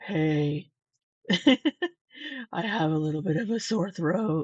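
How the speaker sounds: husky, hoarse, sultry voice. Mocking Amberlynn's voice from the vlog: imitating Amberlynn's sexy cold voice. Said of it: "This is her sexy, cold voice".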